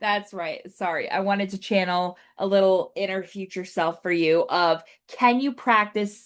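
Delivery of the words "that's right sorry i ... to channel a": plain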